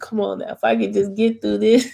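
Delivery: imploring, begging, pleading tone. Retelling own words while sick on Wednesday: imitating own begging.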